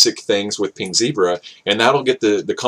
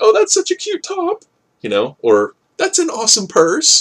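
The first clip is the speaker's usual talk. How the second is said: put-on girly voice, much higher and slower; 14 semitones higher than usual. Giving networking advice, the speaker imitates how women start conversations, high girly voice. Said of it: "that's the best girl voice I can do".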